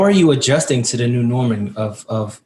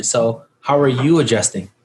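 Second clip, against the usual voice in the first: ordinary talk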